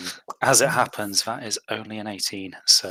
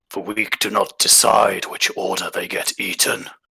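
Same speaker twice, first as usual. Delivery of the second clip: draconic voice of a speaking dragon. Voicing the dragon as it turns to Rulon: dragon voice. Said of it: "In a much more draconic sounding voice".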